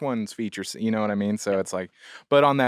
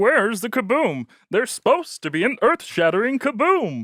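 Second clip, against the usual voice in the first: very high, loud little cartoon character voice; 14 semitones higher, 5 dB louder than usual. Showing the others a Marvin the Martian voice. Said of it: "That's really good".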